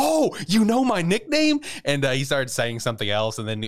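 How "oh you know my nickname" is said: mock super-excited, much higher, louder, slower. Retelling how a man reacted to hearing his old nickname, acting out super excited reply. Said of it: "he got super excited".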